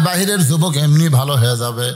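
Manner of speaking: usual speaking voice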